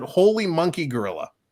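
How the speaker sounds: ordinary delivery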